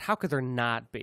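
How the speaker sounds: ordinary talk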